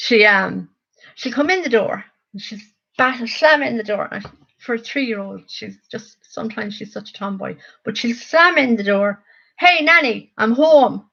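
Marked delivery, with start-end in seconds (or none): 9.6-10.9 put-on thick rural Irish accent, high and loud. Speaker imitating three-year-old Luna calling to her nanny at the door, bogger accent. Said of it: "the biggest bogger accent you ever will hear".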